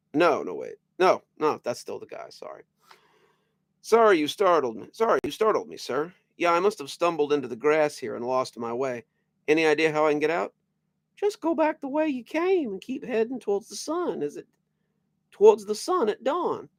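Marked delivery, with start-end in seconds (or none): 11.1-16.6 piping, very high-pitched put-on character voice. Reading a story, giving directions to a lost stranger in Herbert voice. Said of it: "that's my Herbert voice".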